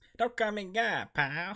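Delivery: very high, shrill, loud put-on voice. Joining a South Park bit: South Park voice. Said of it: "it started sounding like South Park".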